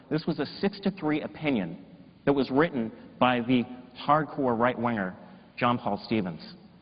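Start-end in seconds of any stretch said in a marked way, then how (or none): none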